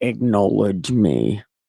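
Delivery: very low, deep, booming deity voice. Speaker retelling a Bible passage and voicing God, in a God voice. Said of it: "It's God voice".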